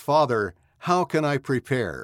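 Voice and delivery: plain reading voice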